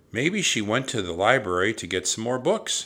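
plain

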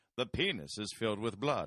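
put-on Transylvanian-accented voice. Recalling the narrator of fifth-grade videos, in a Transylvanian voice. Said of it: "He's like doing like a Transylvanian voice".

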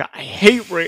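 mock fervent, passionate, all-in outburst. Quoting a movie character's line, imitating a mock-passionate delivery. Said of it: "he says that with such passion".

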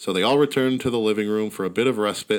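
plain

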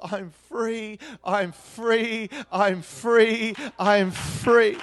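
tearful, weeping, very slow and dragged out. Retelling how a young woman wept after prayer: imitating weeping. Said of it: "she started to weep".

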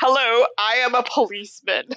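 put-on confused older man voice. Acting out Malcolm with boomer energy reporting a crime: imitating clueless boomer Malcolm. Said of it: "He's like".

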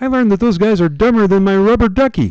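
very high, loud, belted puppet voice. A podcast bit, playing Ernie chatting with Bert about the podcast: Ernie voice. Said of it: "give me an impression and finish this out".

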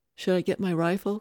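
ordinary delivery

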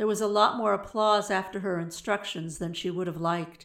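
plain

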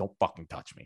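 mock mumbling under the breath. Retelling what she said while trying to find seats, retelling a mutter under breath. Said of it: "just like under my breath".

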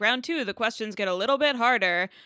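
normal talking voice

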